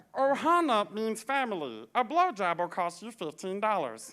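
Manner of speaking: wild cartoon alien creature voice with swooping pitch. Speaker shows off the voice they do for odd requests: Stitch voice. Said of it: "The voice that I found out that I can do is Stitch".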